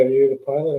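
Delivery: ordinary delivery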